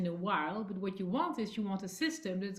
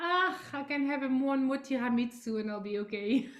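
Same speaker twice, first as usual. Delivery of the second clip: put-on Italian accent, much higher; 5 semitones higher than usual. Describing the inner voices that pop up, the speaker does an italian accent. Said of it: "When the Italian one comes up".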